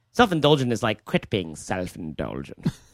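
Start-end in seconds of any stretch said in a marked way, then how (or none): 1.0-2.6 put-on English accent, much lower, quieter. Quoting what grandma says to you, in an English accent. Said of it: "grandma says that to you with an English accent".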